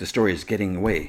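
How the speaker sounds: ordinary talk, nothing marked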